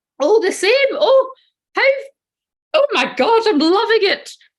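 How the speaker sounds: put-on high, loud granny voice. Answering a question about Charlotte's energy on the channel: Hyacinth-like granny voice. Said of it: "I don't know where that voice has come from. Who's Granny on my channel?".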